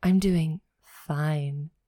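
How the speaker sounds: a little bit sexy. Showing how to answer "how are you" a little bit sexy. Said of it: "I like to say it a little bit sexy".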